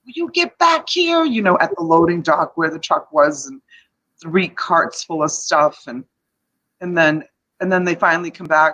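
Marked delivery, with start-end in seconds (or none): 0.2-1.3 high-pitched, wild, crazy yell. Recalling calling the kids back from the hallways, retelling a crazy Italian-woman yell. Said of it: "I'm yelling like a crazy Italian woman".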